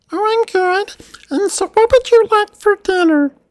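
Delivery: very high, very loud squeaky gnome voice. Narrating a scene to players, voicing a gnome, in a gnome voice. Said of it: "now I get to go into gnome voice".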